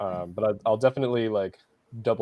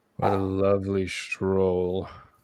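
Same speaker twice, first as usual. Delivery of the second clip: deadpan, flat, dry mocking sarcasm. Climbing the stairs with the group, a character comments on the route: sarcastic. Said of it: "I say sarcastically".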